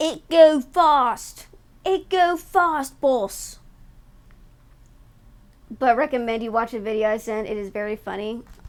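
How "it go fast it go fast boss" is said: big dumb British orc voice. Describing orcs in a video, the speaker does a big dumb stereotype british accent. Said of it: "big, dumb, stereotype British accent".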